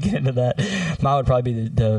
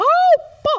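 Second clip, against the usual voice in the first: very high, tiny cartoon mouse voice; 4 dB louder than usual. Asked which cartoon character they'd be, the speaker shows off a Mickey Mouse voice. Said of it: "you could do a good Mickey Mouse".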